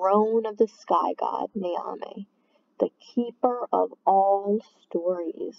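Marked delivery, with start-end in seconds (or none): none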